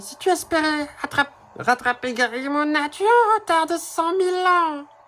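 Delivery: put-on female character voice. Reading a game character's line aloud, voicing a female game character. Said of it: "Je vais essayer de lui faire la voix à elle".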